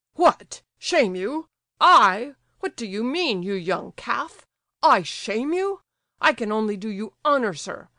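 loud, furious fit of uncontrollable rage. Narrator reads the general's retort to Gania: uncontrollable rage. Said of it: "He jumped up from his chair in a fit of uncontrollable rage".

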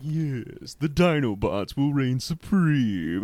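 snooty, slow, drawn-out drawl. Recalling a villain's line while talking about Beast Wars, snooty Megatron voice. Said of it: "the snooty voice of Megatron".

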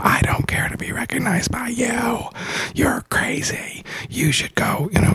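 put-on agitated yelling outburst, mild, held light. Retelling what her friend shouted back after the spirit was called out, retelling screaming. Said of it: "She started screaming and yelling and going".

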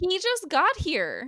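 high, slow, exasperated tone.

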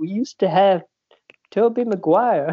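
put-on, high-pitched creepy old-man voice. Talking about Spider-Man movies, speaker tries a Family Guy creepy old guy voice. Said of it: "I was trying to sound like the guy".

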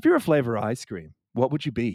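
put-on deadpan movie-character voice. Describing a movie's random questions, the speaker quotes Ned, imitating Ned's deadpan question. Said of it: "he just like deadpan asks all these random questions".

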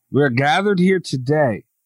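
plain

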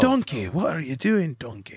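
high, swooping, big, sing-song ogre voice. Asked whether he is doing a donkey impression, a speaker offers a Shrek impression. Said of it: "A Shrek impression".

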